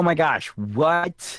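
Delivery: very slow, high fake excitement, "what" drawn out. Redoing a reply after being asked to sound thrilled: put-on thrill. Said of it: "you can sound a little more thrilled about it".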